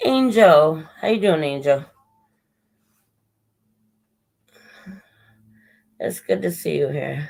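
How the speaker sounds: worn-out, out-of-breath voice. Greeting someone who has arrived, voice failing and out of breath. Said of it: "My voice is getting terrible, and I'm getting really out of breath".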